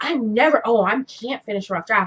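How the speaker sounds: ordinary delivery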